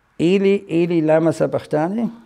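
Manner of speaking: ordinary talk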